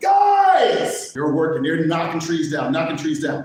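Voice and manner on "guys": very high, frantic, stretched-out holler. Telling a joke, acting out a man atop a tower calling his lumberjacks, retelling a yell. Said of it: "he's yelling at them".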